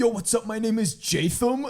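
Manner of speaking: loud, bro-ish voice. Messing around with a friend on a student film set: frat boy impression. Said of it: "pretending to be a frat boy".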